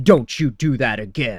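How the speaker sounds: loud, grave, deadly serious delivery. Retelling how a cop lunged and grabbed a guy's hand: retelling a deadly serious warning. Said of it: "Like the cop was deadly serious".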